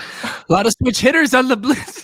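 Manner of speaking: high, fake Canadian accent. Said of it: "like Shrek doing a Canadian accent".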